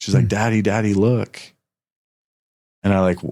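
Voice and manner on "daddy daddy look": put-on tearful young girl's voice, crying. Retelling the daughter's words as a dragonfly lands: imitating a crying daughter. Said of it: "And she's crying".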